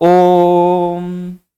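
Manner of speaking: the o of Om held long and stretched. Explaining the pluta vowel in pronunciation: long drawn-out Om. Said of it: "तो ये जो खिंचाव हुआ है".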